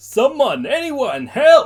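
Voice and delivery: very high, shrill, very loud scream of pain. Reading a story, a familiar voice crying for help: screaming in pain. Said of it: "screaming out in pain".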